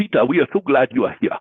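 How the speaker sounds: put-on English spoken with a Ghanaian-style accent. Speaker quotes people greeting him in Ghana, imitating Ghanaian English. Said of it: "it's a different kind of English".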